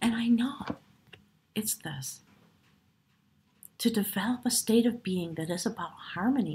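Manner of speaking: choked-up, emotional voice catching with feeling. Speaker sharing what matters deeply to them, choked up. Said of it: "I'm getting all choked up now".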